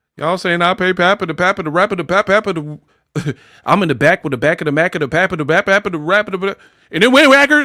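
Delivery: breakneck, high-pitched, rattled-off tongue-twister rambling. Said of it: "you talking all fast".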